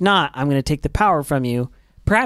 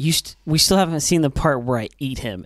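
ordinary delivery

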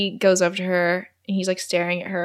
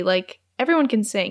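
ordinary delivery

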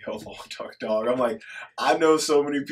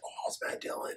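imitating excited reaction, quieter. Retelling seeing an actor appear in a film: retelling own excited reaction. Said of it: "I actually got really excited when I was watching".

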